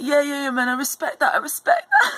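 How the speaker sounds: put-on bouncy, loud, high, swooping young-guy voice. Retelling what a young guy walking past said: imitating a young guy's way of speaking. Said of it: "and he speaks like that".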